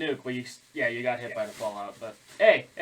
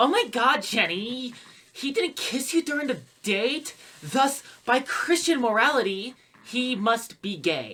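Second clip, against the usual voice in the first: very high put-on teenage girl voice; 10 semitones higher than usual. Quoting a guy's message about a date, the speaker uses a teenage girl voice. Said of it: "the first one is in like teenage girl voice".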